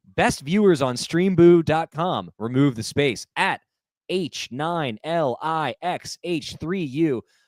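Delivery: high-pitched would-be radio announcer voice. Streamer reads out a viewer's message: wannabe announcer voice. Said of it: "in my like wannabe announcer voice".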